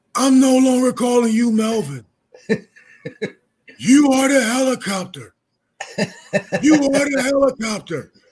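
high, frenzied scream at the top of the lungs. Retelling how an assistant coach reacted to a windmill dunk; imitating Tom Erzin screaming. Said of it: "he was screaming at the top of his voice".

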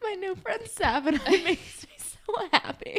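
giggly, mock gushing voice.

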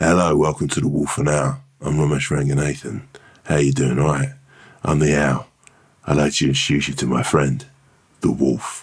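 very low, slow, dragged-out groggy voice. Performing a new impression of Romesh Ranganathan: Romesh Ranganathan impression. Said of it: "this would be the new impression of you".

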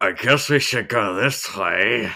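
loud speech through clenched, gritted teeth. Imitating a game character's line of dialogue: imitating talking through gritted teeth. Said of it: "talking through gritted teeth".

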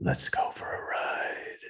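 soft, creepy, disguised killer-like whisper. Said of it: "he's whispering and he says things like".

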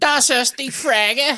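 very high, drawn-out, strong Belfast accent. Saying the German line the way the other speaker would: Belfast accent. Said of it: "say it in your big Belfast accent".

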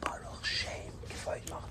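hushed, barely audible whisper under the breath. Showing how the next line of the prayer is said: whispering. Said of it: "and then we whisper".

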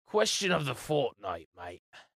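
fake, put-on British accent. Joking about the show segment's name in a put-on british accent. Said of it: "you can't sing Britishly".

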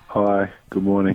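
somewhat low-spirited. Welcomed onto his own show, the guest greets the host, a little depressed. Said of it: "You sound a little depressed".

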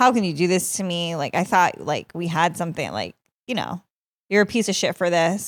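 put-on hurt, cutting, mean, accusing tone. Retelling what a rejected partner said back: imitating someone being mean. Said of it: "he was mean".

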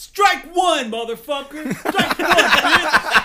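shrill, very high, loud yelling. Retelling how a character shouted at the chef: imitating someone shouting. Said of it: "shouting at the chef".

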